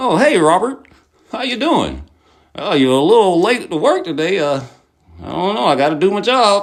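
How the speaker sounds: put-on smiling, fake friendliness. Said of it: "they do the same shit".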